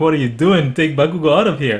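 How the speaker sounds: plain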